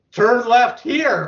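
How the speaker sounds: bossy, annoyed, fed-up sat-nav voice, high-pitched. Acting out an always-angry GPS giving directions, mock-angry bossy GPS voice. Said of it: "Because it's always angry".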